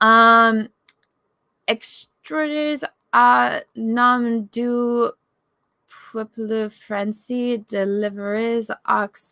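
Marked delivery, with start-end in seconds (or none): 1.7-9.3 clumsy, mangled, terrible French accent. Asked to try reading French aloud, reading the text in a terrible French accent. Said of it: "I have a terrible accent".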